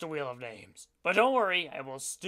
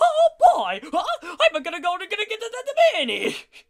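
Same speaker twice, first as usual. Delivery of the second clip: high, loud and swooping Italian accent; 11 semitones higher, 7 dB louder than usual. In a Frankenvoices mash-up round, doing an Italian Mickey Mouse voice. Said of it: "An Italian Mickey Mouse".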